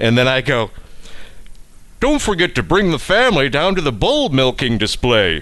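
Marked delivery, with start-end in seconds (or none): 2.0-5.4 silly put-on fair announcer voice. At the Texas State Fair, joining everyone's bit after someone else's line: dumb State Fair impression. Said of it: "doing that dumb impression".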